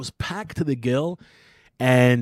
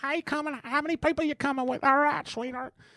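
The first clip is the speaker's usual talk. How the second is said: very high-pitched put-on old-lady voice; 14 semitones higher, 5 dB quieter than usual. Speaker retells calling ahead to a place run by an old lady, imitating Grandma.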